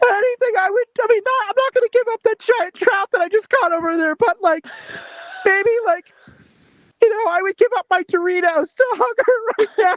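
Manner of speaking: mock tearful. Told to put more oomph into the tears: mock tearful. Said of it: "More oomph for the tears".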